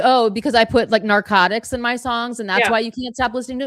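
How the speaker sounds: ordinary delivery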